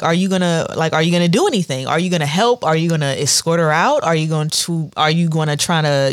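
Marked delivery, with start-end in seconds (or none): 0.0-4.0 mock-calm, calm-sounding delivery. Retelling an incident at a store, the speaker quotes a woman: retelling a calm question. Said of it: "And she's calmly asking him".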